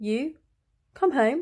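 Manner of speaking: wavering, halting words. Reading a story, a woman calls to the narrator again: very soft, faltering voice. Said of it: "in a very soft, faltering".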